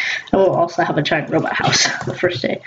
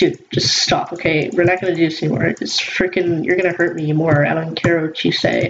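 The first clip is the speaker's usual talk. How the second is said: normal talking voice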